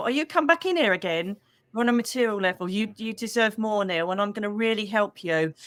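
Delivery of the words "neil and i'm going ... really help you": normal talking voice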